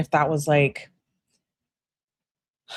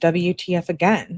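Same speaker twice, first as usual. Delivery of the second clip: ordinary talk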